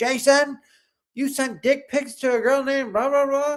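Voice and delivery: acted-out very high call-out yell. Retelling what she yelled to him: imitating someone yelling. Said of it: "she literally yelled to him".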